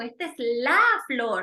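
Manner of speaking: "la" hit hard with strong emphasis. Correcting el flor to la flor, with stress on la. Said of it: "ahí utilizo un énfasis prosódico".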